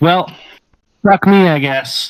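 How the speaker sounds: irritated grumbling bird voice, high and slow. Voicing two birds after losing loyalty: pissed-off birds' voice. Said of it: "the two birds are just pissed".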